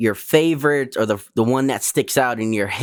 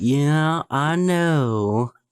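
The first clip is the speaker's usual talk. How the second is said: put-on slow southern talk, higher pitch; 5 semitones higher than usual. Imitating a TV guest who talks slowly: imitating Doctor Phil's slow talk. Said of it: "talks real slow too, man. Like".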